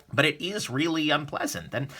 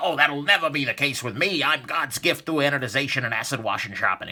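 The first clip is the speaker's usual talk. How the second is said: boastful, full-of-bluster put-on voice. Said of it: "a response that's full of bluster".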